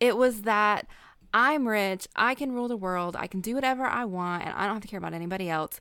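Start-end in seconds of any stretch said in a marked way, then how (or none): 1.3-5.8 put-on Southern accent with its cadence. Imitating how a film character talks: Kevin Spacey Southern accent. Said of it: "Southern accent".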